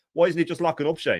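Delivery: pissed-off, fed-up, sarcastic mocking tone. Retelling what his wife said during a Liverpool match, mimicking a pissed-off sarcastic remark. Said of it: "really pissed off and sarcastically and said".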